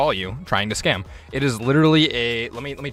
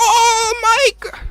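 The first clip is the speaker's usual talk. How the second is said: loud, high-pitched mock Indian accent; 5 dB louder than usual. Retelling a scam call, imitating the caller: imitating an Indian call-center accent. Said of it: "Sorry, I'm being stereotypical".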